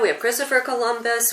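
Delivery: ordinary delivery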